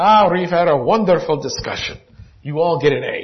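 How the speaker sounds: put-on thick Greek accent. Retelling what the man giving the exam told the class, heavy Greek accent. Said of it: "he has this heavy Greek accent and he says".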